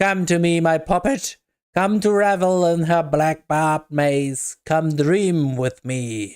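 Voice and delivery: cackling delivery. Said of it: "The cackling voice breaks in once again".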